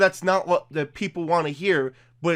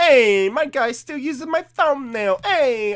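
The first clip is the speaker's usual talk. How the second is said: playful, fake Italian accent, pitched up; 7 semitones higher, 4 dB louder than usual. Reading out a comment from a friend during a giveaway, Italian accent. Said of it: "I don't know why I'm using an Italian accent".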